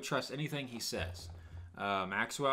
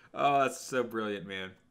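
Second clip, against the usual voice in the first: ordinary delivery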